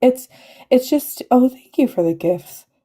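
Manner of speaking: voice welling with emotion. Speaker thanks everyone for the gifts while making an announcement, getting emotional. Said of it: "Sorry, I'm getting emotional now".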